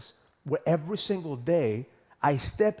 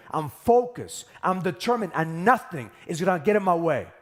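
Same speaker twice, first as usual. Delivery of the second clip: loud, raised voice, every word driven home; 3 dB louder than usual. Speaker demonstrating a power statement versus an affirmation, with raised voice. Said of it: "as you raise your voice".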